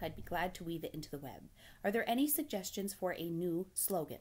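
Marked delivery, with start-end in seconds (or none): none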